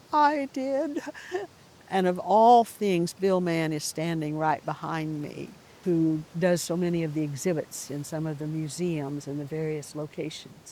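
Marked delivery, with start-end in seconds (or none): 0.1-0.9 timid, meek, small, high little voice. Retelling the exhibit writer's reply from behind: imitating Bill Mann's meek voice. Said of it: "this meek voice from behind that says".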